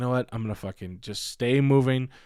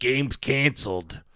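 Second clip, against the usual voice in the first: imitated Reno accent; 2 semitones higher than usual. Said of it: "classic Reno accent, though, that guy".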